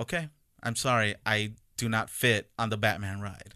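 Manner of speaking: ordinary talk, nothing marked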